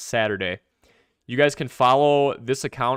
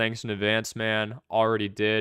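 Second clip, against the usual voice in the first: ordinary delivery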